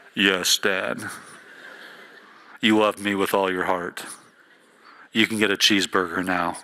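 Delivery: very deep put-on voice, as low as possible. Imagining a voice speaking to them: Morgan Freeman deep voice. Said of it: "a deep voice like Morgan Freeman".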